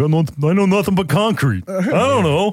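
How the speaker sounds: put-on high Philadelphia accent. Describing Philly transplants in the suburbs, in a Rocky accent. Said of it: "my best Rocky accent is like".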